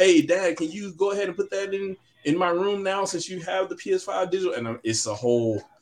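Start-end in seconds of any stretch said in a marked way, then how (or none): 0.0-4.5 put-on high, pleading, begging child voice. A father retells his son's request to him; imitating a son begging. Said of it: "And he's begging".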